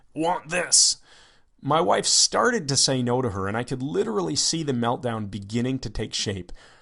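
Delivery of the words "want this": put-on caveman-kid voice, much higher. Retelling what a little girl said while pointing, in cave child voice. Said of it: "said in her cave child voice".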